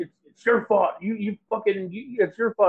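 put-on angry voice. Retelling what a friend said while getting mad: imitating someone getting mad. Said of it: "the whole time he was getting mad at me".

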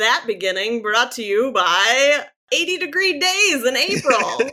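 big, full radio-announcer voice. Podcast host jokingly wraps up an opening bit in an announcer voice. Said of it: "That was the most announcer voice".

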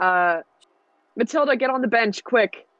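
high, yelled call across the space. A player's character yells to another character as a snake comes toward them, yelling. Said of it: "I'm gonna yell for Matilda".

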